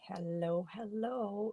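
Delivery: scratchy voice. Opening a talk while still getting over a cold, in a scratchy voice. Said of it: "I have a scratchy voice".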